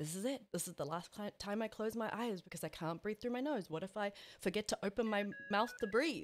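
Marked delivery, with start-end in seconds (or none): none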